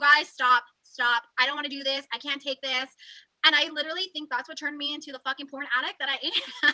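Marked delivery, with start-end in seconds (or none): 0.0-2.9 imitated scream, louder. Retelling a moment of freaking out, imitating own past screaming. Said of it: "I remember screaming".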